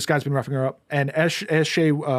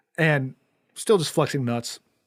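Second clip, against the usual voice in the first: normal talking voice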